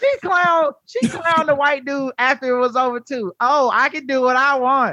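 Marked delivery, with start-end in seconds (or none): 3.4-4.9 stern scolding woman's voice.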